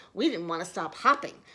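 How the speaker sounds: ordinary delivery, nothing marked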